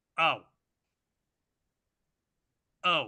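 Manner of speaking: deflated, disappointed oh, said twice. Checking the refreshed results on screen, sounding disappointed. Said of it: "You sound disappointed".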